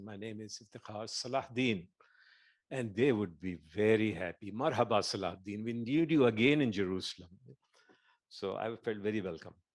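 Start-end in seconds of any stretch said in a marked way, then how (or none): 0.0-1.9 put-on very heavy Arabic accent, laid on heavily, soft.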